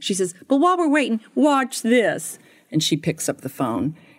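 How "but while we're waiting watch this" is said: put-on Southern woman accent, higher. Retelling what a lady in a lawyer's office said: imitating a Southern woman. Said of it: "she kinda was Southern".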